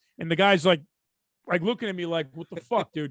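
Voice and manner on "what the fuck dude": angry, steamed man's voice, lower pitch. Retelling how a man in a car looked, imitating a steamed man. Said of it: "the guy was steamed".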